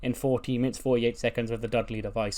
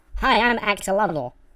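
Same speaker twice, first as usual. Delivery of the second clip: disguised, distorted voice; 10 semitones higher, 6 dB louder than usual. Retelling how a woman introduces herself to him, Axolotl's distorted voice. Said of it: "she has a distorted voice".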